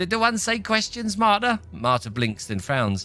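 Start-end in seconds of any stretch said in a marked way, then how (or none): 0.0-1.6 strange, very high sing-song character voice. A game master voices the character Marta answering a player's questions; Marta character voice. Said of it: "I can't remember what voice I did for Marta before".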